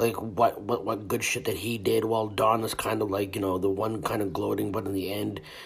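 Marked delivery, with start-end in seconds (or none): none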